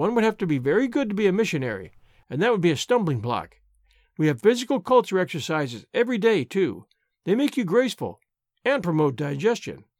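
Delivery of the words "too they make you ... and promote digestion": ordinary delivery, nothing marked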